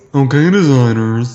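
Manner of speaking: slow deliberate man's voice. Attempting an impression of a man on a podcast: slow impression of a man. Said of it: "You just made him sound slow".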